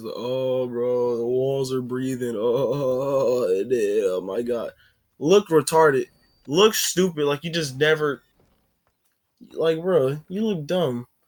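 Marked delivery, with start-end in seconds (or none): 0.1-4.7 slow, drawn-out fake stoned voice, dazed wonder. Retelling how a cousin faked being high: imitating someone pretending to be high. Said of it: "acted like he was, he had, like, some sort of high going on".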